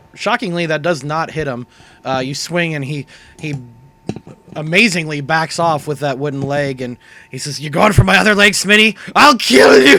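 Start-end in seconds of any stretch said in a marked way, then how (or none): 7.6-10.0 furious, enraged bellowing, very loud and rising. Voicing a raging character who threatens a player after a missed attack: enraged character shouting. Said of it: "in his rage".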